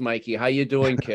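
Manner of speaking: Boston accent, north-of-Boston way of talking. Explaining he grew up north of Boston, showing how people there talk: Boston accent. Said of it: "where we all talk like this".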